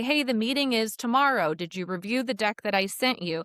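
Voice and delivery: ordinary talk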